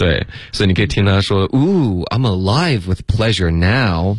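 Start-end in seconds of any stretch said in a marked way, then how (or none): 1.5-4.2 acted-out mock sarcastic ironic tone, 'now' stressed. Explaining a quoted english line and acting it out: acting out sarcasm, stressing 'now'. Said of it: "然后非常讽刺的一个语音语调".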